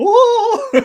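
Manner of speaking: loud, high, giddy whoa. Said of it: "maybe get all giddy".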